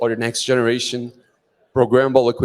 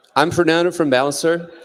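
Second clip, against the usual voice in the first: ordinary delivery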